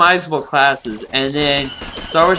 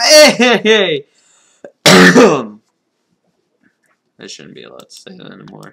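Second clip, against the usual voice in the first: raised voice breaking and cracking mid-line; 7 dB louder than usual. Narrating a Let's Play of the game, voice cracking. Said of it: "Voice crack".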